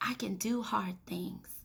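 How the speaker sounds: murmured very quietly and softly. Retelling a child saying this to herself during math, in a soft voice. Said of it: "in a, a soft voice".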